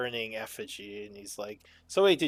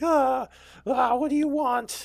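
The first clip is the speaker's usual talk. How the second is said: freaked-out, very high, loud panicked squeal; 12 semitones higher, 7 dB louder than usual. A game master voices a character who failed a wisdom save, freaking out. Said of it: "he's freaking out".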